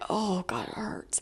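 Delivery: very quiet, breathy, drawn-out pained whispered moan. Retelling bending over with cramps: retelling a pained groan. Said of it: "like, in pain".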